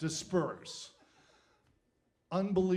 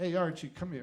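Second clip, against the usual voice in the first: ordinary delivery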